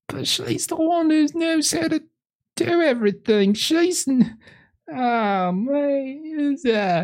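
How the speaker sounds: very high-pitched, slow, blubbering ugly crying. Voicing a husband holding his hurt wife: ugly crying. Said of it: "ugly crying".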